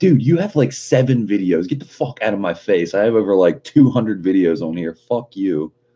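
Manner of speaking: exasperated, fed-up, irritated ranting. Recounting what they told a small creator demanding credit, retelling an irritated rant. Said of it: "It really got on my nerves".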